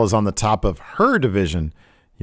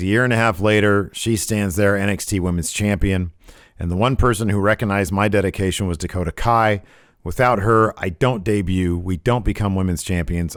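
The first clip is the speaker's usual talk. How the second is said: ordinary talk, nothing marked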